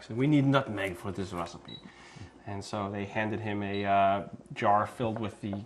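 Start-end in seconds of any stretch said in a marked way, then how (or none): 0.2-1.8 put-on heavy, thick, laid-on French chef accent. Retelling a friend's story, quoting the chef in a thick french accent. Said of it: "a very thick French accent".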